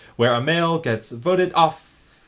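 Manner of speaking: awkward announcer-style reading. Imitating the announcer's line about a male being voted off, awkward announcer cadence. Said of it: "It's more about like the cadence being a little awkward to make it make it sound like the announcer".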